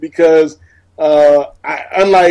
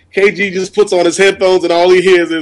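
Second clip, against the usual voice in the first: ordinary talk, nothing marked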